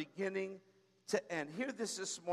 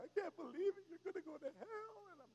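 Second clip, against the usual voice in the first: mock sobbing, high, tearful, distraught wail; 9 semitones higher, 10 dB quieter than usual. Retelling her reaction on catching the speaker smoking: imitating someone crying. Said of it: "She's, like, crying".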